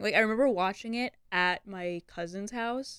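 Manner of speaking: ordinary talk, nothing marked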